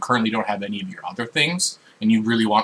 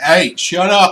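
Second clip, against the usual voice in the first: loud, high-pitched shout; 8 semitones higher, 7 dB louder than usual. Narrating a game scene where a guard answers a prisoner's screams, guard shouting down. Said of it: "One of the guards will just shout down".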